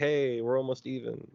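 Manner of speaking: usual speaking voice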